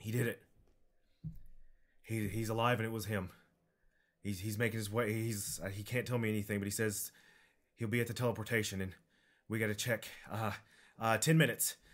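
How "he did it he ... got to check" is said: normal talking voice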